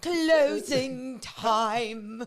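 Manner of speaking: put-on old British lady voice and accent. Imitating how the other speaker's voice turns at closing time: British old lady voice. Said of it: "your voice like you turn into like a British old lady".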